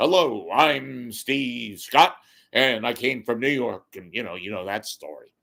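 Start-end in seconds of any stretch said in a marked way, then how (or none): 0.0-3.9 put-on radio host announcer-style voice. Imitating the afternoon drive anchor's way of talking: Steve Scott impression. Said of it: "the guy that talks like this".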